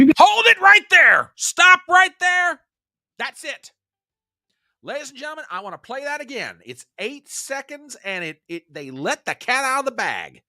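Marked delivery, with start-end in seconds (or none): 0.0-2.6 very loud, shrill, high-pitched yell. Stopping a clip to replay it for the audience, yelling. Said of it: "I'm sorry for yelling at you guys".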